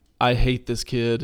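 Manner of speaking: ordinary delivery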